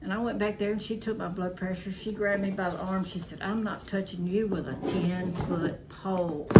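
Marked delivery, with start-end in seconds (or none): none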